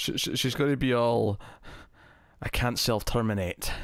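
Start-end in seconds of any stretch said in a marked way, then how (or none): 2.4-3.7 sudden switch into a put-on Scottish accent. Predicting what a show character will say, slipping into a scottish accent. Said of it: "I've went really Scottish all of a sudden".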